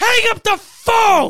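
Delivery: long, drawn-out, shrill, top-of-lungs scream. Describing a movie scene, re-enacting the character's scream at the top of his lungs. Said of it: "scream at the top of his lungs like that".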